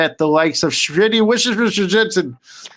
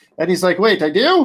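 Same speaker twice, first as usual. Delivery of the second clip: normal talking voice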